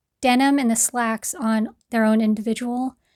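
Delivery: normal talking voice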